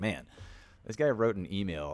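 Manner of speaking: ordinary talk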